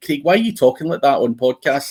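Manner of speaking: ordinary talk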